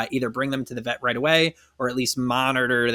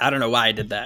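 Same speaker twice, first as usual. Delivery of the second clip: plain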